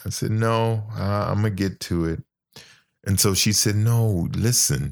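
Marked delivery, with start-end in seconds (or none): 0.3-2.2 put-on casual, nonchalant, offhand tone. Recounting answering a doctor about seeing a nephrologist, retelling a nonchalant reply.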